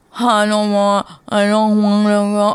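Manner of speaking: play-acted slow, high, muddled, unclear speech. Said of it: "his speech isn't like yours or mine".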